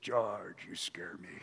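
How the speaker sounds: low, growly voice, hushed and barely audible. Preacher retelling a 2 a.m. phone call from a caller: growly voice. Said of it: "a growly voice said".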